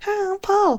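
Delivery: very high-pitched cartoon monkey voice. Retelling what a three-eyed cartoon monkey would say: three-eyed monkey voice. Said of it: "the three-eyed monkey, and he would go".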